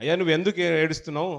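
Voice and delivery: normal talking voice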